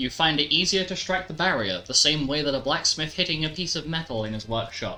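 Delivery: plain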